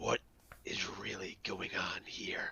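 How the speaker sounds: menacing whisper, full of threat and intimidation. Getting real close to question someone in character: intimidating tone. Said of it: "what do you say in your intimidating tones?".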